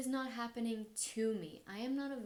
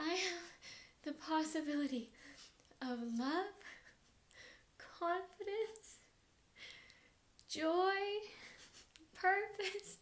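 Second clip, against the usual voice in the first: pitched-up, tearful words through sobs; 8 semitones higher than usual. Recalling being broken up with and fired, the speaker re-enacts sobbing speech at the front of the room. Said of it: "I'm sobbing, I'm sobbing, and I'm saying".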